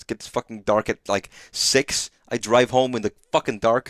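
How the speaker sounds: getting mad, irritation building into heated venting. Saying goodnight to everybody, getting mad. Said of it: "sorry, I'm getting mad".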